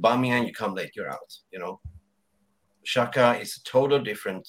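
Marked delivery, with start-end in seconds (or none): none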